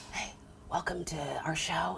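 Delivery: hushed, very quiet whisper. Retelling opening a show at Best Buy at 3 a.m. among sleepers: whispering. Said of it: "why are you whispering?".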